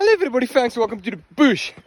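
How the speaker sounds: winded, breathless, very high-pitched, loud voice. Greeting viewers at the start of a bush walk, out of breath. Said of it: "I'm a little bit out of breath".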